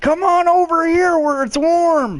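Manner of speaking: deer creature voice, yelling.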